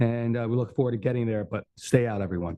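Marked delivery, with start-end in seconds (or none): 1.8-2.6 put-on fatherly dad voice, firm tone. Giving a project update and telling everyone to stay out: put-on dad voice. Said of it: "My dad voice".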